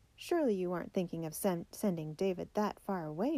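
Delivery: plain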